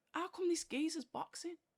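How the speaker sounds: high, incredulous, disbelieving tone. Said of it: "so I'm thinking".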